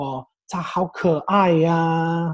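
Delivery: mock feminine Mandarin, adding sentence-final 'ah'. Explaining gendered chinese speech, quoting female teachers over a cute baby, imitating female teachers' mandarin. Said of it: "They put this "ah" on the end".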